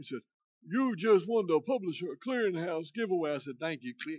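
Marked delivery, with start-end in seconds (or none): 0.7-3.3 put-on Indian accent, pitched much higher. Retelling a phone call about a giveaway, the speaker imitates Johnny's Indian accent. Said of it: "he's talking in an Indian voice".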